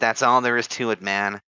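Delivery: put-on heavily nasal stoner voice. Retelling an interview answer, imitating the interviewee: imitating Clavicular with a stoner voice. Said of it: "Why are you doing, like, a stoner voice?".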